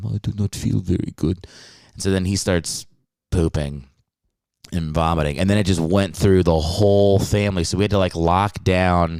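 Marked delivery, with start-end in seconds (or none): 0.1-1.5 put-on French-accented complaining tone. Recounting grandfather falling ill during a family meal: French accent impression of grandfather. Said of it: "that's my impression of him".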